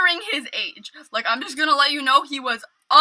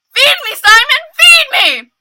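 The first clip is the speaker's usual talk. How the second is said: piercing, very high, very loud, drawn-out scream; 11 semitones higher, 11 dB louder than usual. Retelling a guy at the hot tubs shouting a movie line: imitating someone screaming. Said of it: "he starts screaming".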